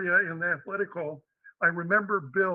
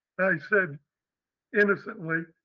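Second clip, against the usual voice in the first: plain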